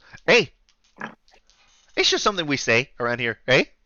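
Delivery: put-on Canadian innkeeper accent. Voicing an innkeeper greeting the players as they walk in: put-on Canadian accent. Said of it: "please just deal with the accent".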